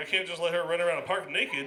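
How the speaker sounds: plain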